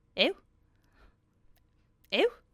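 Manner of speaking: high, swooping owl call in a Liverpool accent. Describing a TikTok trend and doing it yourself: Liverpool owl impression. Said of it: "my impression of an owl ... they're from Liverpool".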